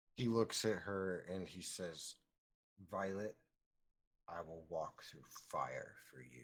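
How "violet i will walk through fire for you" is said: low, grave, dead-serious, completely earnest voice. Voicing a character making a vow to a goat: very serious. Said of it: "very seriously".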